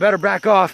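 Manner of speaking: shrill, very high, loud yelling. Scared while filming, telling whatever is in there to back off, yelling loudly. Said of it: "I'm yelling loud".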